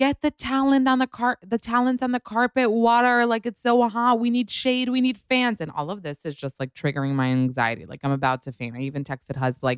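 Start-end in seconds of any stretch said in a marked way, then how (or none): 0.0-5.6 very high-pitched shouting, called out. Retelling how employees at the carpet entrance yelled: imitating staff yelling. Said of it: "literally they're yelling".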